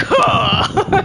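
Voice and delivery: very manly, grunted he-man huh. Imitating a calm cool guy: a very manly put-on voice. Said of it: "The very manly, like".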